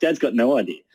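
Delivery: ordinary talk, nothing marked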